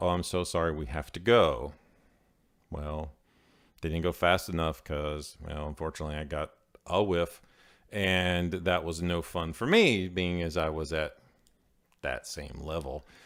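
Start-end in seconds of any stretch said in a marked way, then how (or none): 0.0-1.7 imitated very nervous woman's voice. Retelling a woman rushing out of the store, imitating a very nervous woman. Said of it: "the woman gets very nervous and goes".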